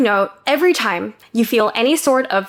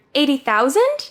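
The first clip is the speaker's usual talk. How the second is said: "eighty thousand" with timid, unsure rising intonation; 3 semitones higher than usual. Retelling answering an interviewer's dream salary question, retelling an unsure rising question. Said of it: "I said it with a question mark".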